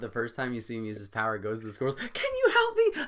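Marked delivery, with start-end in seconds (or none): 2.1-2.9 very high, very loud squeaky voice. Describing a character asking squirrels for help, in a high squeaky voice. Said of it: "he's got this high squeaky pitch voice".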